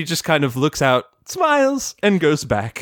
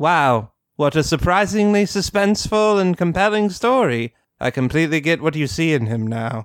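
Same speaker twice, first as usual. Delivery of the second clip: mock deadpan put-on voice. Retelling a cartoon scene, Rarity replies to a story, put-on deadpan Rarity voice. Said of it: "Rarity goes deadpan herself".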